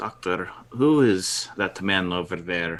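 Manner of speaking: low, hushed half-whisper under the breath. A player's character half-whispers a question to the doctor, in a hushed half-whisper. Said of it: "in a hushed tone, I'd like to whisper".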